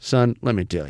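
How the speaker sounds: put-on condescending manner. Imitating men who talk down to teenage boys: imitating a condescending man. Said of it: "it's a condescending kind of thing".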